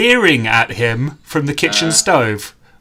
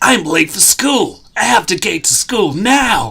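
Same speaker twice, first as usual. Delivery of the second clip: put-on character voice, pitched up high; 6 semitones higher than usual. Reading a Sonic story aloud, the hero's line: Sonic voice. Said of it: "That's Ian McKellen's Sonic voice".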